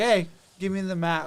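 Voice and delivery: plain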